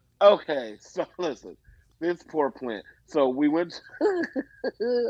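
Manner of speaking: slow speech, cracking up, laughing through words. Starting a story about a mother's new plant: laughing while talking. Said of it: "I'm laughing, sorry".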